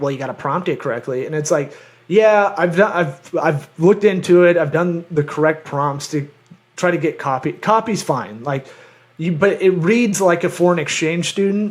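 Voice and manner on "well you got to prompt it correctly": know-it-all tech-nerd voice. Retelling what some nerd says about using the ai: imitating a nerd. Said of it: "some nerd will come in and go like".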